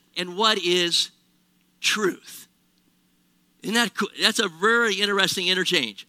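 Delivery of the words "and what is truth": put-on condescending voice, much slower pace. Speaker retells Pilate's reply to Jesus, mock-condescending as Pilate. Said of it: "condescendingly, he says".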